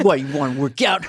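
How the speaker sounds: mock aggressive flirtatious, seductive tone. Retelling a sketch where characters went crazy in the gym: imitating an aggressive sexual come-on. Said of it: "that aggressive sexual thing".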